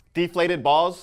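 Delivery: very loud, high shout of the phrase. Asked to say it again, the speaker repeats the phrase, yelling. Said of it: "Why are you yelling at me?".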